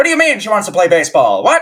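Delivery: put-on very loud, high, shrill, swooping old-Hollywood transatlantic accent. Two speakers discuss the transatlantic accent; one does an old-hollywood transatlantic accent. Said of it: "talk with a transatlantic transatlantic transatlantic accent".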